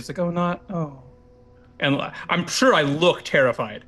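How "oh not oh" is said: very quiet whisper, slightly higher. Voicing a terrified character as the others pass by: very quiet whisper. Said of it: "it's very whispered".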